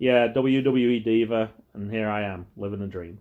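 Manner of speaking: slow, flat, droning, dead-level monotone. Quoting a woman who said her line in a flat monotone voice. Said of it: "she said it in the most monotone voice".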